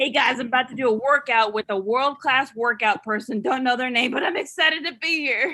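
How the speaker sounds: plain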